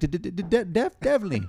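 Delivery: high-pitched, stammering, building up. Teasing another speaker by imitating his Water Boy impression: imitating a friend's Water Boy stutter. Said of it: "You were at home just being like".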